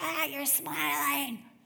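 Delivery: put-on upset, agitated, rough, worked-up outburst. Retelling the upset woman's words: imitating someone worked up. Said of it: "this woman who's so worked up, so upset".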